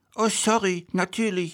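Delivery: meek, sheepish, very high little voice. Replying after James complains about the thing in his throat; sheepish. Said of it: "sagt dieser kleinlaut".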